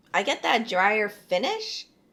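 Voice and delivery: voice breaking and cracking on the words. Tasting a drink and giving his notes, voice cracking. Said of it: "my voice is cracking".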